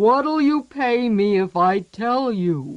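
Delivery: growled monster voice. Narrator reading the troll's reply to a girl, growling troll voice. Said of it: "he growled".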